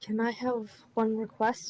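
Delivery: very quiet, soft voice. Voicing a character who speaks up asking a request: speaking very quietly. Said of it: "he very quietly speaks up".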